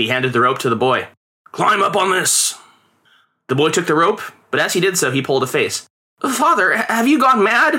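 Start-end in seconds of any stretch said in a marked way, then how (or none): 6.2-7.8 shrill, very high protesting cry. Reading a story aloud, a boy answers his father, protesting. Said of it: "He protested".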